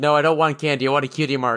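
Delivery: ordinary talk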